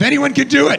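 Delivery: high, loud, belted excited shout. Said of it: "I was like".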